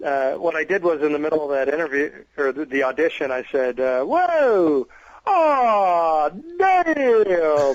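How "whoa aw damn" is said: high, loud, swooping exclaim with drawn-out aw. Retelling an audition line as a tribute impression: imitating Bill Oberst's character Dale. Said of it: "I'm mocking, uh, Billy Oberst with his character, uh, Dale".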